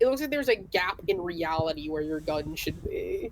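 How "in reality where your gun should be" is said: ordinary talk, nothing marked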